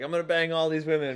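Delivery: put-on cocky, boastful voice. Joking about how every guy enters an orgy, imitating a cocky guy. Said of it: "every guy that ever enters an orgy is like".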